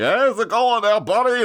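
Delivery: very high pitch, loud, chummy voice. Retelling the Joker greeting Bruce Wayne: Honeymooners guy voice. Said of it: "from The Honeymooners kind of voice".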